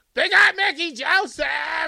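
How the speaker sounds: high, loud, drawn-out scream. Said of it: "He went running down the hall screaming".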